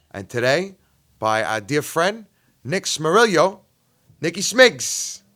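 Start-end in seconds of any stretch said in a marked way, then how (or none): 2.7-5.2 over-the-top, exaggerated, put-on Italian accent. Podcast host introducing a guest friend, doing an impersonation of an Italian. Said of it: "That was my impersonation of an Italian".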